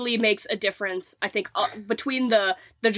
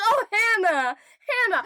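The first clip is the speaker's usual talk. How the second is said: very high, calling-out voice; 11 semitones higher than usual. Imitating how the film's characters address the housekeeper: imitating film characters calling hannah. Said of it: "that's how they're always like".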